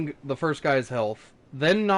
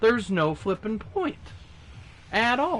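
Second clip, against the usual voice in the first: voice breaks, cracking upward on the words; 6 semitones higher than usual. Speaker explaining they won't chuck their controller, voice crack. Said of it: "Voice crack".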